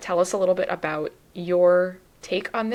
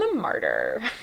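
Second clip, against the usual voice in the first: martyr said in a Californian-style American accent; 3 semitones lower than usual. Showing how to say a word from a list: American accent. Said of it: "Say it like an American".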